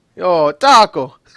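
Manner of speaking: put-on Italian accent. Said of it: "everything sounds Italian".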